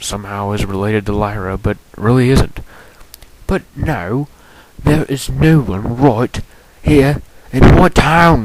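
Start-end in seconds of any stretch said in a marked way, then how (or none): 3.5-8.4 put-on British accent, storytelling delivery. A storyteller goes back to narrating the story, British accent. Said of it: "let me go back to the British accent".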